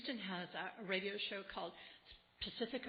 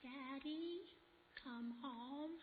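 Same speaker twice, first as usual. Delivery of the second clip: put-on soft, high, little child's voice; 6 semitones higher, 6 dB quieter than usual. Retelling a caller putting a son on the line, little child's voice. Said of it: "you'll hear this little voice".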